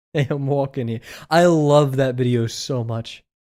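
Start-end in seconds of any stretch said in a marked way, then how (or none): 0.1-1.0 exaggerated, heavy put-on New York accent. Quoting a favorite video in a put-on New York accent. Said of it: "We don't talk like that".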